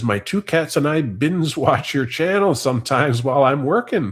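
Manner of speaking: ordinary delivery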